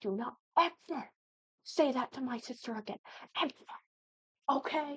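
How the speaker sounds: high, berserk, furious outburst. Retelling a brother's reaction to a family friend's joke: imitating someone going berserk. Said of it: "he just went berserk".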